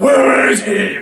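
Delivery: loud, gravelly, rough growl.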